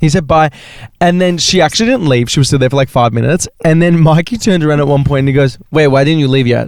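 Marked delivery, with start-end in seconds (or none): 5.7-6.7 blunt, imitated manner. Telling a funny story about Mikey and a woman who stayed: imitating Mikey being blunt. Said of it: "just so blunt".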